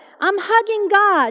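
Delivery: mock, high, put-on yelled voice. Retelling what a man with raised hands yelled out, retelling a yell. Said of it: "he yells out".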